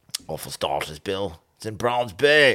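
butchered, bad South African accent. Trying to say a suburb's name: bad South African accent. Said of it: "I can't do a South African accent".

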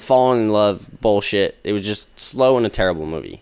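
plain

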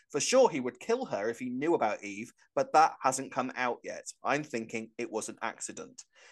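ordinary delivery

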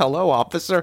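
small, high-pitched, querulous voice. Retelling stopping in front of a police officer, high and querulous like Milhouse. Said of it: "like high-pitched and querulous".

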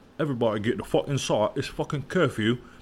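put-on English accent, public-address announcer style. Retelling what the curfew speakers announce, now playing in English: English accent. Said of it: "English accent".

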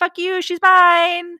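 very high, very loud, shrill shout. Summarizing a story where a character shouts back at another's men, retelling a shout. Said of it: "So he shouts back at Zeus's men".

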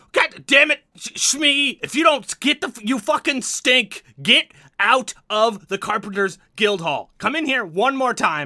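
furious, angry, high-pitched yelling gnome voice. Voicing a gnome who yells back at shmee, angry yelling gnome. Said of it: "the gnome yells back".

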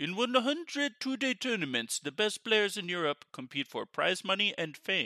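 bad put-on Polish accent. Speaker reads a tournament description aloud in a bad Polish accent. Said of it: "should I do a Polish accent for this?".

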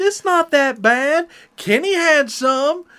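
put-on very high, high-pitched drawled country accent. Man retelling what another man said after a very strong drink, in a country drawl. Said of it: "He gets that country drawl and goes".

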